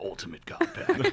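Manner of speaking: breathy, whispered, utterly serious delivery. Narrating a giveaway prize name in the most serious voice: Liam Neeson voice. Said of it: "I just imagine Liam Neeson, like".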